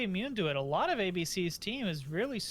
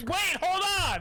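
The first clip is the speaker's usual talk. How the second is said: put-on panicked scream, higher and louder; 12 semitones higher, 7 dB louder than usual. Joking about the emergency exit ability: imitating Calista screaming. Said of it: "Calista just screams".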